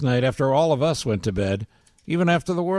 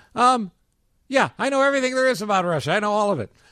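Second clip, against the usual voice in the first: dripping with sarcasm, voice pitched up; 7 semitones higher than usual. Recounting a man's answer under questioning at MSNBC: mock-sarcastic Carter Page impression. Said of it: "being sarcastic".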